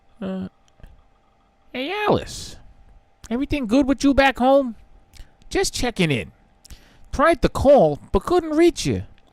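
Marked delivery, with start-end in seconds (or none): 1.7-9.0 very high sing-song voice, done badly. Acting out Barry Wheeler checking in with Alice, bad Barry Wheeler impression. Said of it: "that's a really bad Barry Wheeler".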